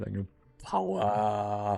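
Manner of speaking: voice cracks on drawn-out word power. Riffing on ship names, the speaker exclaims with his voice cracking. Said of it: "I like my voice crack there".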